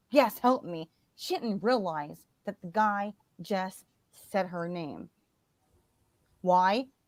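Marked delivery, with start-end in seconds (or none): 0.1-0.9 put-on hysterical crying. Retelling a mother begging a stranger for help: imitating hysterical crying. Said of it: "She's crying, hysterical".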